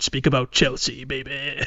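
really rough, gruff voice. Pitching a game where a voice speaks after a question: gruff voice. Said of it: "a really, like, gruff, like, voice saying".

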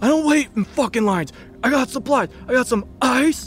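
acted-out, worked-up man's rant, pitched very high. Retelling a man told to wait in line for gas, imitating an agitated man. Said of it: "But he does not calm down".

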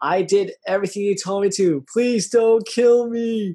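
high, frightened, pleading, terrified yell. Retelling what a man said when he got the chills: imitating someone yelling. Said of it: "He yells".

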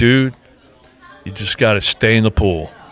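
plain

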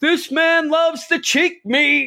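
put-on very high, shrill, loud yell. Retelling how a man yelled out his order to the whole party, retelling someone yelling out. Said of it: "And he just yells out".

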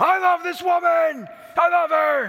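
shrill, booming, high, loud, drawn-out screaming. Retelling a man's public declaration of love in a square: imitating a man screaming. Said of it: "screams out".

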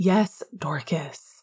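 through gritted teeth. A man answering a woman who announced his romantic life to the office: gritted through clenched jaw. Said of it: "gritted out through a clenched jaw".

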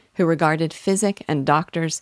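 plain reading voice

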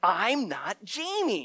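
put-on loud calling out. Telling how people followed, yelling a wrong name: retelling a louder yell. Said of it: "try to yell a little louder".

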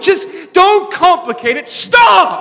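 very high, slow, emphatic, almost yelling. Addressing the audience while almost yelling at oneself. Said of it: "I'm I'm not yelling at you. I'm almost yelling at myself".

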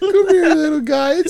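put-on high, loud baby talk. Urged by the others to do baby talk, the speaker gives it a go: baby talk. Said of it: "A baby talk".

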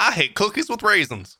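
high, caricatured mock Louisiana accent. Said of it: "That was not an accent from Louisiana".

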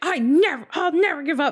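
very high, angry cry. Retelling a character's reply to a question: imitating an angry outburst. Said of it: "she gets, like, angry".

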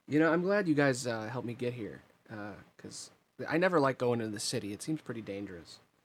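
plain

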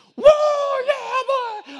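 rowdy, very high, loud sports-fan scream. Recounting a guy cheering during a game, retelling a fan screaming. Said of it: "he was like screaming".

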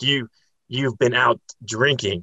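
mock, slow, angry, accusatory scolding. Retelling how Peter cussed at the speaker, imitating Peter cussing angrily. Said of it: "he's cussing at me".

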